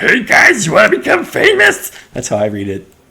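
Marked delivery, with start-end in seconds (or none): 0.0-1.9 loud, tipsy-sounding voice at very high pitch. Acting out a stranger walking up to someone, in a drunk Kermit the Frog voice. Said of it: "It's like a drunk Kermit the Frog".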